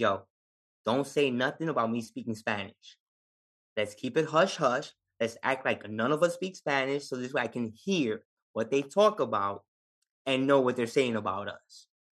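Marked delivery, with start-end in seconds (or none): none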